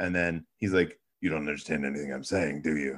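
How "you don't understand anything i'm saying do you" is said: low, deep, hushed superhero voice. Speaker retelling what a male character says to her in a scene, Batman impression. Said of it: "that was a great Batman impersonation".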